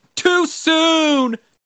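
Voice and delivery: put-on screaming. Retelling how people reacted to the game's announcement: imitating people screaming. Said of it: "people were screaming".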